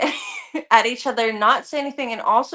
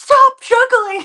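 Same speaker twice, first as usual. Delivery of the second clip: very high, very loud, shrill screeching scream; 12 semitones higher, 10 dB louder than usual. Retelling what a woman screamed at them: imitating a woman screaming. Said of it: "She screamed at us".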